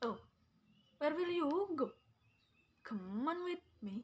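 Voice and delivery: English spoken in a Madurese accent.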